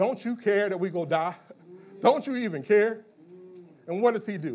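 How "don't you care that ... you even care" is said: sarcastic, scornful voice. Retelling disciples waking Jesus during a storm: imitating sarcastic disciples. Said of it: "they sarcastically say to him".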